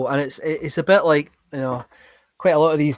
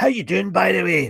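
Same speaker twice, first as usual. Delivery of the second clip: put-on heavy, laid-on broad Glasgow accent; 4 semitones higher, 4 dB quieter than usual. Recalling a performer coming on at an Edinburgh pub, broad Glasgow accent. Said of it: "he came on broad Glasgow accent".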